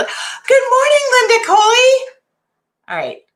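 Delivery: voice going up high. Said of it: "I don't know why my voice gets so high".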